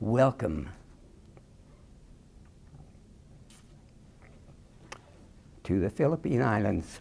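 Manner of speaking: breathy, magical, romantic whisper. Recalling arriving by ship, the speaker quotes a man, imitating a magical romantic voice. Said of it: "in a magical romantic voice he said".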